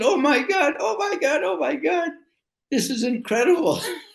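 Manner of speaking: mock shrill, excited screaming, way up high. Retelling how someone reacted on seeing the passport: imitating someone screaming. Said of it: "he's screaming".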